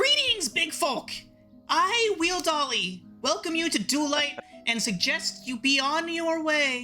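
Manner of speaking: tiny little voice. Narrator voicing a tiny figure greeting the listeners from behind, Wheel Dolly's tiny shouting voice. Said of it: "you hear a tiny little voice shout".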